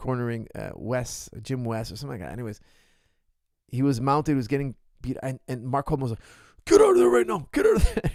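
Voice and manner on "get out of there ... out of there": very high, loud screaming. Retelling a coach yelling orders to a mounted fighter: imitating Mark Coleman screaming. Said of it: "he was screaming".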